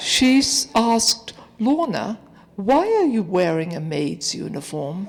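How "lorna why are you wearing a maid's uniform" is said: very soft, quiet, hushed voice. Retelling a co-worker's question to the speaker at work, in a very soft voice. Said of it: "in this very soft voice".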